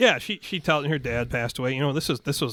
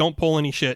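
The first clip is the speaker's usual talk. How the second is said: plain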